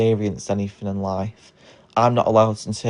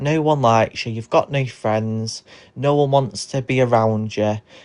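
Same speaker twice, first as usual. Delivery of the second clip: normal talking voice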